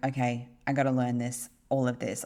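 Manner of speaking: ordinary talk, nothing marked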